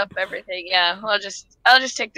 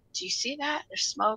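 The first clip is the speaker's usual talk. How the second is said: very quiet, hushed, secretive whisper; 4 semitones higher, 9 dB quieter than usual. Playing a character who points out smoke to a companion: whispering in character. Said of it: "I whisper to him".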